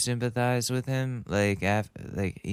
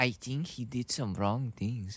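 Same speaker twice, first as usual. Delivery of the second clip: soft, unconvincing put-on German accent; 5 dB quieter than usual. Attempting an impression of a specific man; bad german accent. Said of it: "I can't do the German accent".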